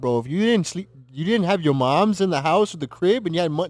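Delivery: loud put-on Canadian accent, woman's voice. Retelling a video of a Canadian woman: imitating a Canadian woman. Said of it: "and she's Canadian, talking about".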